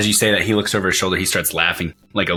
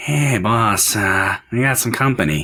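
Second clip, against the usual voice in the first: wheezing, weaselly underling voice; 3 semitones higher than usual. Narrating a scene, voicing a figure who calls out to the boss, wheezy, weaselly voice. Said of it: "A weaselly voice wheezes out".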